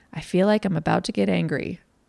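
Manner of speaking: usual speaking voice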